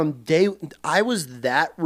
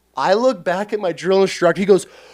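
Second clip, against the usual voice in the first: usual speaking voice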